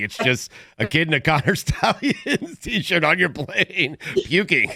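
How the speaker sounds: talking between bursts of laughter, laughing through the words. Reacting to another speaker's story from a plane, laughing while talking. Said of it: "I'm laughing".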